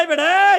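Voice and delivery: sharp, loud, high shout.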